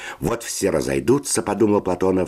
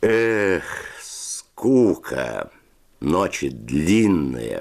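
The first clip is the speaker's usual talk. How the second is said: drawn-out drawl, stretching the words. A narrator reads Fedya's spoken line, drawn-out drawl. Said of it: "протянул Федя".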